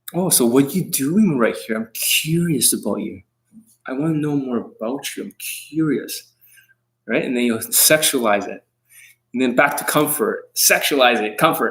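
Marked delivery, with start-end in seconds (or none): 0.1-6.3 gentle, reassuring, soothing, comforting sweet talk. Imitating how another man talks to a girl: imitating him talking comfortingly. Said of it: "That's how he talks like".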